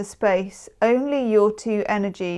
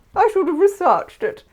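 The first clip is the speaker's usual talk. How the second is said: very high, put-on posh accent; 10 semitones higher, 4 dB louder than usual. Speaker discussing a card deck, slipping into a posh voice. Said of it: "my posh voice came out".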